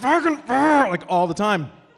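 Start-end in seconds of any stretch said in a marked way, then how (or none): 0.0-0.9 very high, loud, jaw-clamped, through clenched teeth. Retelling how a father cursed at home: swearing through clenched teeth. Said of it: "jaw was wired shut".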